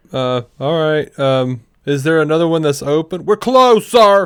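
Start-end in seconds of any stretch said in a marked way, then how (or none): 3.2-4.2 bellowed loudly, pitched high. Retelling what a woman said after they pulled up, retelling a bellow. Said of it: "she just bellows out at me".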